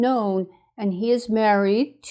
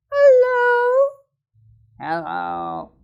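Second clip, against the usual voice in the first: put-on doll voice, higher pitch. Voicing a doll that is asked to say hello: speaking as a doll. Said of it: "So say hello, dolly".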